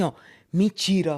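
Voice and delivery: put-on low Northeastern US accent. Retelling a story, the speaker quotes a man's reply in a slight Northeastern Brazilian accent. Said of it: "com aquele sotaque meio nordestino".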